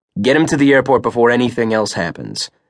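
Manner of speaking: plain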